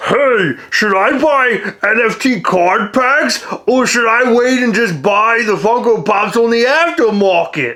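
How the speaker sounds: gorilla voice, New York accent. Asking a viewer question in a new voice: gorilla from New York voice. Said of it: "like a gorilla from New York".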